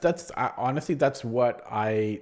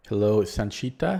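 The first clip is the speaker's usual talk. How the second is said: special, unusual intonation on "hello"; 3 dB louder than usual. Greeting someone by name: special intonation. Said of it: "I said it with, like, a s-, special intonation".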